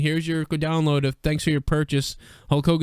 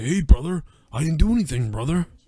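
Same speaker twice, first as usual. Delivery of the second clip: breezy, offhand, casual, innocent-sounding delivery. Imagining Hogan brushing off a complaint, Hulk Hogan impression. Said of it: "I can only imagine Hogan, like, just being like".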